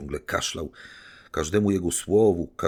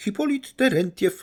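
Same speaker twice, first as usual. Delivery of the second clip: sudden, unexpected, very high, shrill squeaky voice; 4 dB louder than usual. The last of the visitors introduces himself by name, in an unexpectedly squeaky voice. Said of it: "niespodziewanie piskliwym głosem zapiszczał".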